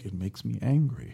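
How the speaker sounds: mock hushed, very quiet, calm, controlled even tone. Discussing a character's dialogue, imitating Michael's calm tone. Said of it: "everything is under control... his tone is just like".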